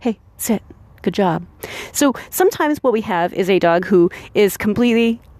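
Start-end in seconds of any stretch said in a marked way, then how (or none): 0.0-1.5 hushed half-whisper, barely there. Showing how to give a dog a sit cue quietly: half-whispering. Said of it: "I also want to be able to whisper".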